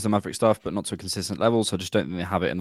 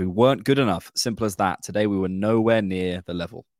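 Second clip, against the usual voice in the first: ordinary talk, nothing marked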